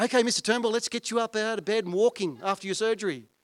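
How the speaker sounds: mock eager, upbeat, high, loud young voice. Retelling a hospital visit, quoting the physio: imitating an enthusiastic physio. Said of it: "this young, enthusiastic physio comes in".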